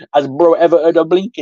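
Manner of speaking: put-on London street roadman accent. Retelling how a comment read in the head: London roadman accent. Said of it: "I just read it in that, like, L-, London, ha-, like, roadman ac-, like, accent".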